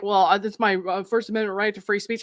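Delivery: normal talking voice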